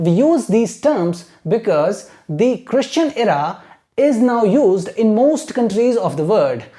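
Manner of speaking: very slow, clear model reading like dictation.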